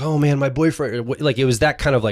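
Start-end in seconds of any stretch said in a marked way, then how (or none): 0.0-0.9 theatrical, overwrought, over-the-top, gushing emotional outburst. Imitating girls talking about a boyfriend: mock dramatic emotional outburst. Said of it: "they're dramatically like".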